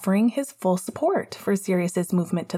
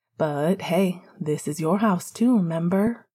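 plain reading voice

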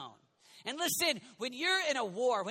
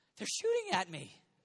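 play-acted weepy, tearful, whiny voice; 3 semitones lower than usual. Acting out a soldier complaining to his commanding officer: mock whining in tears. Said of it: "whining and in tears saying".

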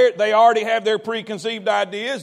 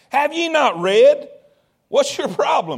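put-on sarcastic tone, higher pitch; 4 semitones higher than usual. Retelling a question put to a religious scholar: retelling a sarcastic question. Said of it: "that's a little sarcasm right there".

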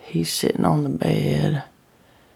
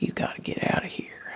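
fast, hushed, urgent whisper. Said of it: "he say".

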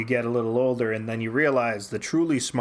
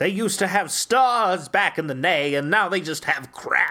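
high, catty grand-dame voice; 6 semitones higher, 3 dB louder than usual. Picturing a writer with an ascot and cigarette holder: Joss Whedon impression. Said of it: "Maybe I'm doing him".

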